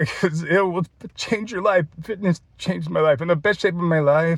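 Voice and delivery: tearful, weeping, crying through the words. Speaker encourages his audience to start moving their bodies, crying while speaking. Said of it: "and I'm crying right now".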